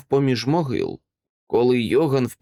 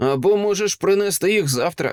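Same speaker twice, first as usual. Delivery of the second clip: pitched-up, sneering, mocking, jeering tone; 6 semitones higher than usual. Johan answers the silent Karl with a scornful laugh: mocking. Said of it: "глузливо сказав він".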